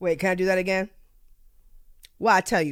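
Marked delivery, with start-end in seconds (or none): 2.2-2.7 slight touch of Jamaican accent. Saying a phrase that slips into sounding like a family member. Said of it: "I just sounded like one of my, uh, my family members".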